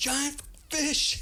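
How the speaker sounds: put-on very high, startled, screamed shriek. Retelling being scared by a huge fish underwater: retelling own scream. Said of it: "I'm screaming".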